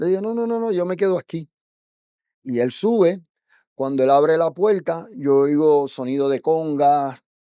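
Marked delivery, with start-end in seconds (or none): 0.2-1.5 mock wary distrust, quick and high. Recounting a stranger inviting them upstairs, the speaker replays their own refusal: distrustful refusal. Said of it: "así con toda la desconfianza del mundo".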